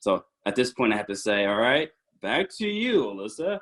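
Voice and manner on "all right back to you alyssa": pitched-up game show host announcer voice. Bringing a speaker back in, in a game show host voice. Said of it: "use my game show voice".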